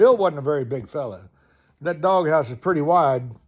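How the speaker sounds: ordinary delivery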